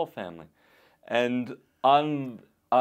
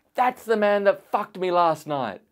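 put-on high, loud child's voice shouting; 7 semitones higher, 6 dB louder than usual. Retelling a little kid standing up before the mic: imitating a kid yelling. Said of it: "points and yells".

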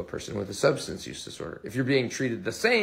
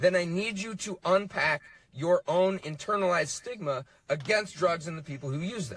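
seething, furious, very angry, raised-pitch insistence; 6 semitones higher than usual. Speaker in a played clip addressing listeners, very angry tone. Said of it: "In a very angry tone".

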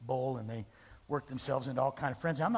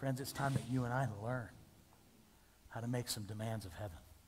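ordinary talk, nothing marked

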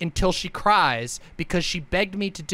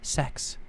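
hushed, nervous whisper under the breath; 3 semitones lower, 7 dB quieter than usual. Imitating people who say the word under their voice: whispered 'sex'. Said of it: "they whisper it under their voice because they're nervous".

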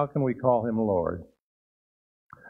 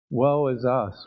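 usual speaking voice

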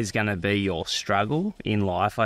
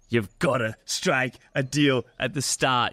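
put-on tough-guy American gangster accent; 3 semitones higher than usual. Host quoting the guest's own words back to him, in an american gangster accent. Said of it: "It was that American accent".

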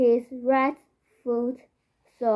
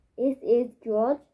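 ordinary talk

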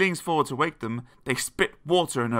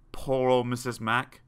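plain reading voice

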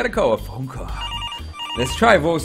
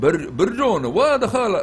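failed, pitched-up put-on Russian accent; 7 semitones higher than usual. Voicing a character who looks Russian: attempted Russian accent. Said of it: "He looks kinda Ruski".

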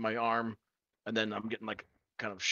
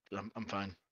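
timid, nervous, shy, soft-spoken delivery; 2 semitones lower, 6 dB quieter than usual. Voicing Ren shyly declining the offered drink: shy, nervous refusal. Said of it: "he'll just kind of shyly just shake his head".

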